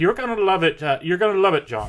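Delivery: put-on rural Irish country accent. Playing his mom driving through the Irish countryside to an old manor, Irish accent. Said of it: "His mom's got sort of an Irish accent".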